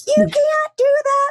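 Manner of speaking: high-pitched scream. Retelling being screamed at after coming off the track: imitating Timmy screaming. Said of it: "screaming at me".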